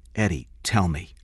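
usual speaking voice

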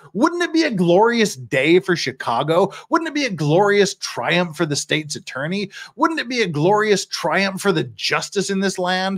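sneering sarcastic tone. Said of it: "That's sarcasm".

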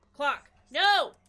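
frantic, panicked, very loud yell. Racing to use the clock in time while playing: panicking. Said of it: "I'm panicking".

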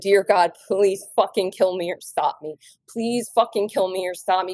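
desperate screaming voice. Retelling crying out to god while pounding the steering wheel: retelling a desperate screamed prayer. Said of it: "I simply screamed".

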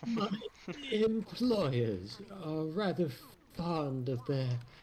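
put-on old-fashioned eighteenth-century period British accent. Playing G-Man to Dr. Freeman, in a voice like a 1700s British man. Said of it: "more like a 1700s British man".

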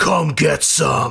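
rough, creaky, growling monster voice. Game master voices a bugbear growling back at a player's barbarian: growling bugbear. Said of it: "He growls back".

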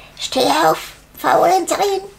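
high, ringing calling-out voice. She shakes the sleeping girl awake and calls to her, calling out. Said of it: "rüttelte sie wach und rief".

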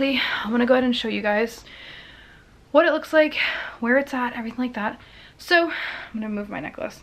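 breathless, out-of-breath voice. Speaking to viewers while showing a heart monitor, out of breath. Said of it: "I'm like so out of breath".

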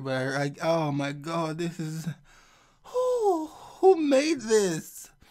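talking through laughter. Reacting on video to a sculpture unveiling, laughing while talking. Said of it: "I'm really trying to be serious here".

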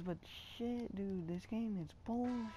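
very hushed, fed-up, frustrated swearing. Narrating a basketball game video after repeated fouls, frustrated cursing. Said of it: "I'm sorry, I don't normally cuss my videos".

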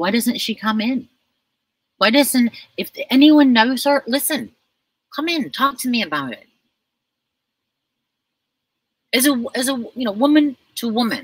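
trembling, nervous high voice. Speaker appealing to listeners, in a nervous, shaking voice. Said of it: "I'm shaking because I'm very nervous".

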